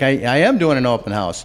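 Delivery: high, loud, eager and cheerful voice.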